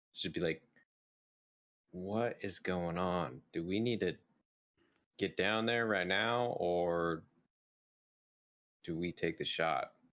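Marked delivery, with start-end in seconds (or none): 1.9-9.8 whispering in character. Playing a character who whispers a question to Natasha while aiming: whisper. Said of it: "I'll just kinda whisper to her".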